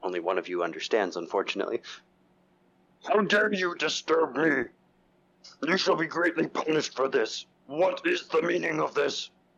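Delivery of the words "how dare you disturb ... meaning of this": shrill, very high, outraged orc yelling. Voicing a naked orc yelling at Grick: orc yelling angrily. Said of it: "He starts yelling at, uh, at Grick".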